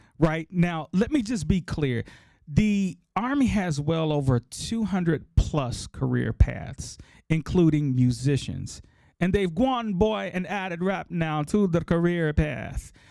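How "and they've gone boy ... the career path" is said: clumsy, bad, put-on Jamaican accent. Speaking to the audience, later apologizing for it: terrible Jamaican accent. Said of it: "Sorry about my terrible accent".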